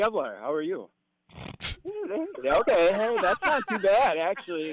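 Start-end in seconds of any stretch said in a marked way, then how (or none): 0.0-0.9 firm, gutsy voice with backbone and gumption. Coaching someone to introduce himself, the speaker demonstrates saying it with a backbone. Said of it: "Say it with a backbone".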